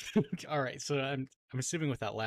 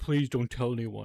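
put-on pleading voice; 4 dB louder than usual. Retelling how a man in a video begged the others: imitating someone pleading. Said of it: "pleading with him".

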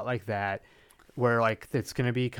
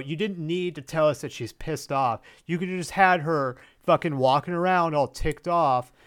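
ordinary talk, nothing marked

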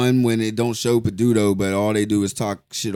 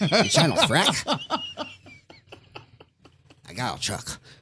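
put-on creepy perv voice, higher and quieter; 7 semitones higher, 5 dB quieter than usual. Joking that the word sounds like a perv, then: put-on perv voice. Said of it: "Stop with that voice".

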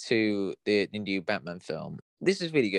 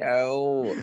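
high mock posh English accent. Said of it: "your real posh accent".

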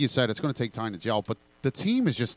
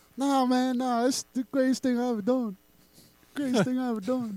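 soft, very high-pitched voice, way up high; 12 semitones higher than usual. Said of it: "Was he [name]?".

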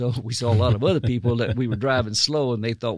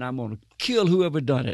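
mock raging screaming man, voice barely raised; 3 semitones higher than usual. Retelling how an intruder stormed into the mission: imitating a man screaming. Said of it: "starts screaming".

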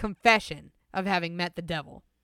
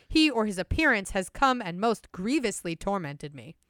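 ordinary talk, nothing marked

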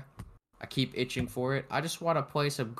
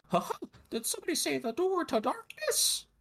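very high-pitched, sing-song delivery. Quoting the game's silly line about the door to darkness: Mickey Mouse voice.

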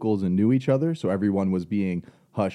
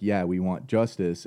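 ordinary talk, nothing marked

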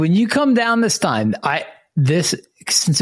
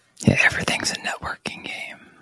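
soft whisper under the breath. Agreeing with another speaker, whispering. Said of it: "Why are we whispering?".

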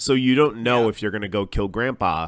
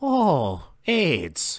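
put-on Irish lilt, high and swooping; 7 semitones higher than usual. Answering a request to do an Irish accent right now: Irish accent. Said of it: "do an Irish accent right now".

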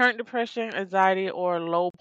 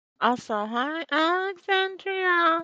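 eerie, creepy, very high-pitched voice; 10 semitones higher than usual. Greeting Alexandria, who is in the chat, in a creepy put-on voice. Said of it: "I don't know why I did that voice".

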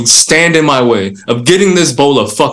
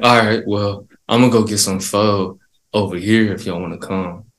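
put-on stoned voice, lower and quieter; 5 semitones lower, 7 dB quieter than usual. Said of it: "I can't with the fucking eyes and voice".

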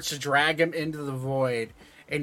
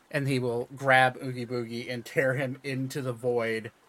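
ordinary talk, nothing marked

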